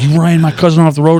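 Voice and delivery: high, loud screaming. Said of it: "screams like".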